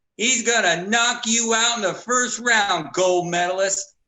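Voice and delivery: mock full-lung taunting shout. Retelling a taunt yelled at a fighter at the weigh-in: imitating someone yelling loudly. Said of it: "yells at the top of his lungs".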